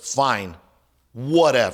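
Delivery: put-on irritated, curt, dismissive tone. Retelling how the speaker's wife answered curtly after being told she could not bring something. Imitating an irritated reply. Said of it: "you know how they talk like that?".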